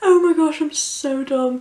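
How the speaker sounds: high, tearful laughing, crying with laughter. Failing to open a lip gloss, laughing to tears. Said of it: "I'm actually crying".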